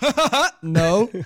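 loud, nervous laugh, very slow and drawn out. Retelling how Cody answered dad's question across the table: retelling Cody's loud nervous laugh. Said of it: "He laughed really loud and nervous".

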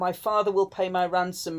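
ordinary talk

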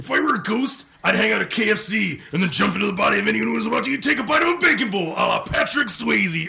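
very high-pitched, very loud bellowing rant, like a yell. Reading a contest entry about a ghost at KFC: Randy Macho Man Savage voice. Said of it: "am I doing Randy Macho Man?".

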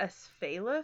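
slow, drawn-out Asphaleth, second-to-last syllable stressed, rising.

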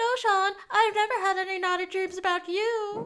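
shrill, loud mocking tone. Recapping a show episode, acting out a character mimicking Juliet: mocking Juliet voice. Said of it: "Sean does his Juliet voice".

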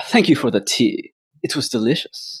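breathy, slick, smooth salesman whisper, overly polite. A cloaked figure nods to Yaito and thanks him for the tea; character's proper voice. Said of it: "That's his proper voice".

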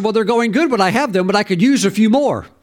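mock half-laughing joking tone. Retelling own reply about his meetings: imitating a laughing, joking tone. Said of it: "I kinda said that kinda, like, laughing and joking".

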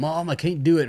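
high, screamed, mock delivery. Retelling a movie scene where a daughter cries out to her mom: imitating someone screaming. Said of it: "screaming to her mom".

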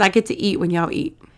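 plain

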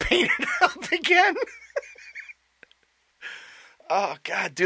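very high voice, breaking into laughter, laugh-choked words. Reacting to a funny remark from the other speaker, laughing while talking. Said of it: "I'm laughing so hard I'm sweating".

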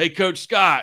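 calling out loud and high.

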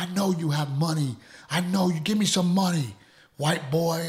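mock high, aggressive, in-your-face demanding yell. Telling how people outside the casino demanded money in your faces, imitating aggressive yelling. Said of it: "yelling at us and screaming at us".

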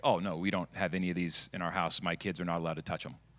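acted deadpan, flat delivery. Retelling how the tech inventor answered a guy about his kids, deadpan. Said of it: "like, deadpan".

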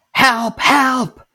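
very high screaming cries. A narrator voices the same voice screaming again: screaming for help. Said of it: "you hear again the scream".

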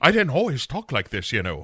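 bad put-on Irish accent. Voicing a character who has caught an Irish accent as a curse: bad Irish accent. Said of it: "the curse of the Irish accent".

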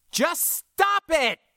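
very high-pitched, roaring bellow. The narrator cuts into an argument between two people, bellowing. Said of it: "I bellowed".

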